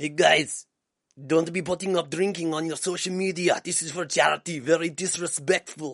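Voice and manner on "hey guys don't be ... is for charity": loud put-on Russian accent drifting into Austrian. Retelling what Artem Lobov said, in an attempted Russian accent. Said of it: "What's a Russian accent?".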